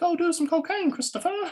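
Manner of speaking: put-on, very high little British girl's voice. Retelling someone's trick against addictive urges, in a little british girl voice. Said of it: "Christopher's is like a little British girl".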